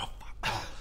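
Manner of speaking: whispering in a panic.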